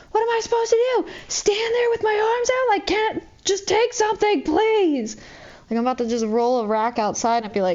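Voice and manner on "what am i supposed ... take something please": mock desperate scream, very high. Retelling own past screaming in the back room about too much product: retelling a scream. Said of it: "screaming in the back room last night".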